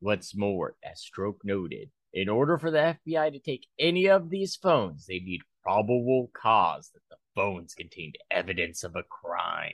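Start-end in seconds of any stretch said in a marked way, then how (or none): 5.1-9.7 low, put-on, menacing, villainous, sinister voice. Explaining a legal point, delivered in a sinister voice. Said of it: "I tried to do that last part in my most sinister voice".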